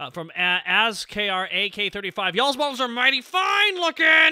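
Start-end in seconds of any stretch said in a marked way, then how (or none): 2.3-4.3 forced niceness, very high, loud, through gritted teeth. Reading out a viewer's message, acting through gritted teeth. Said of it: "said through gritted teeth".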